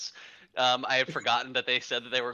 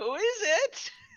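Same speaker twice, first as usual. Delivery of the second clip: put-on very high, quavery elderly woman's voice. Answering the door with a puppet in a planned bit, old lady voice. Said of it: "in like an old lady voice".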